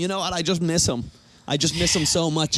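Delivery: mock crying, tearful voice. Retelling a movie actor's interview with kids: imitating someone crying. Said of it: "he was crying, going".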